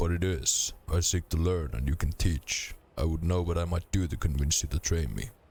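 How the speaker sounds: plain reading voice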